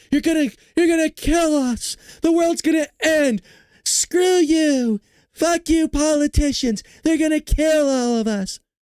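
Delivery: very high, slow, drawn-out ranting. Mocking how some people talk, with an impression: Greta Thunberg impression. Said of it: "like the Greta Thunbergs".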